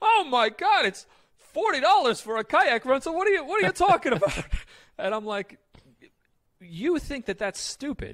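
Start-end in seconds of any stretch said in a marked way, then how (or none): 0.0-4.4 put-on New York accent impression. Retelling what dad said about a kayak rental, imitating dad's New York accent. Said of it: "you're going to hear my dad impression of his New York accent".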